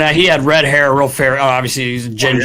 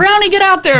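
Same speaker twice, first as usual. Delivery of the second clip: very high-pitched voice, way up high. Retelling their dad's story about a face-off, doing a high-voiced Bob McCammon impression. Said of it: "He had a high voice too".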